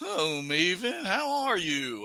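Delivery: high, swooping, frog-like puppet-style voice. Speaker tries an impression of a guy he knows, John Paz impression. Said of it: "So it's like that guy John Paz".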